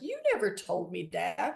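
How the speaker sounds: ordinary delivery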